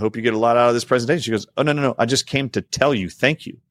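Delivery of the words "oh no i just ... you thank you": tearful, higher voice, speaking through tears. Retelling a woman who came just to thank the speaker; imitating crying through tears. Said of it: "she's crying through her tears".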